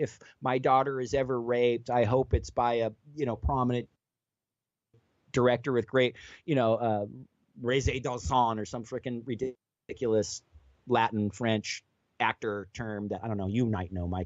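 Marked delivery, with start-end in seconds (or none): none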